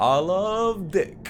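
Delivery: very high-pitched hollered shout. Retelling shouting things into the night sky: retelling own shouting. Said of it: "just start shouting".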